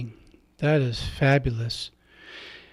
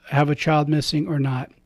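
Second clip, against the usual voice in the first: usual speaking voice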